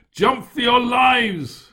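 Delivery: very high, loud bellowed shout. At sea, the narrator shouts to the others, bellowing against the wind. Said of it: "I bellowed against the wind".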